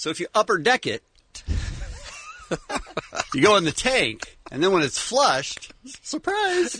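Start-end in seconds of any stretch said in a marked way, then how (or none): 6.0-6.8 voice jumps much higher, bright, surprised. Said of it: "why'd you voice go up so high when you said surprise".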